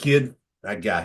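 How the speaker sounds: low, sleazy, smooth-talking voice. Telling of moving to Hollywood and meeting an agent, in a put-on sleazy agent voice. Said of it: "it's some sleazeball".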